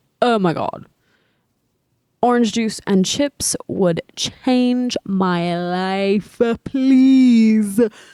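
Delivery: mock slow, dazed, stoned drawl. Retelling a film scene where Jane asks for snacks: imitating Jane high. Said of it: "high as shit".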